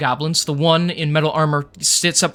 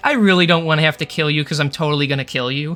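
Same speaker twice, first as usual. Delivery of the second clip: mock polite, sweetly menacing tone. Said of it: "I'm like".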